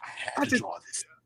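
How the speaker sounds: very quiet, breathy whisper, barely audible. Teasing a friend by repeating his line in Batman voice. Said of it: "you put your Batman voice".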